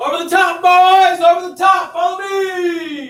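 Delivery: very loud, very high battle cry. Showing a class how a sergeant led the attack: acting out a sergeant's charge call. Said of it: "So it'll be like this".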